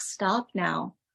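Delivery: normal talking voice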